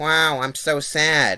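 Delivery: deadpan, emotionless, level monotone with sadness. Imitating an actress's performance in a movie, mock flat monotone. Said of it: "the same monotone delivery the whole time".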